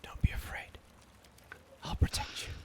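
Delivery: gentle, soft feminine voice, barely above a whisper. Voicing an unseen voice reassuring a player: gentle barely-above-a-whisper feminine voice. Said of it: "gentle, barely above a whisper feminine voice".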